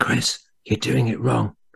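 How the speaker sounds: put-on quiet whisper. Retelling what Peter said while sitting beside the painter: imitating Peter quietly whispering. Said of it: "quietly whispering to me".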